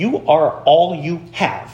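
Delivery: laid-on, slow, put-on motherly voice. Quoting what mom told her fighting children: imitating mom's voice. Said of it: "She'd say it like that. That's a really good impression of my mom".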